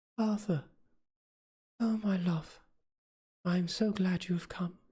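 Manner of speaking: whispering softly. A woman in bed opens her eyes and greets the man she loves: soft whisper. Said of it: "I found that [name] moved slightly, / in a faint voice".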